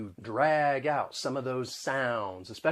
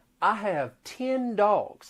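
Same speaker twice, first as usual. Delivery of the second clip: put-on Southern US accent, much higher; 8 semitones higher than usual. Demonstrating how the southern accent mixes vowel sounds, in a southern accent. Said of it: "changes with the southern accent".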